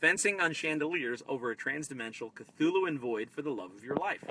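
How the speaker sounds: plain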